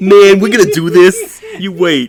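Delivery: put-on very high, swooping New Jersey tough-guy accent. Speaker mimics the X gang leader's words to the others, New Jersey gang-leader impression. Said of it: "That's exactly what he sounds like".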